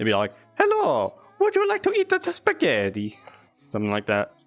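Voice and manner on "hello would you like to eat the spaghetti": very high, widely swinging, swooping cartoon voice. Showing how they voice Mario in roleplay with a sample line, Mario voice. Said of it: "when I come in as Mario".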